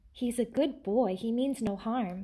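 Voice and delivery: ordinary delivery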